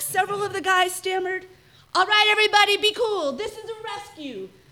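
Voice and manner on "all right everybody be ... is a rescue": loud shouting yell. Kelly bursts in on the armed men to rescue Beth: yelled. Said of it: "Kelly yelled".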